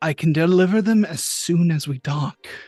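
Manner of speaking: quiet, muttered whisper. Narrating a scene, voicing a character whispering to himself. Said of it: "You hear Dirk whispering to himself".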